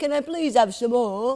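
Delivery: put-on very loud, high northern English little-girl voice. Imitating the other speaker as a little girl, in a northern english child accent. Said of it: "I was from northern England".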